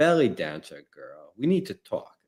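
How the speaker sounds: put-on markedly stronger, heavily leaned-into British accent. Retelling a movie scene, quoting the actress: imitating Rachel Weisz's British accent. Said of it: "her British accent change".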